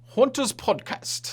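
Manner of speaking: "podcast" pronounced in a British accent. Introducing a guest's podcast, saying podcast like a British person. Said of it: "I just said podcast like a British person".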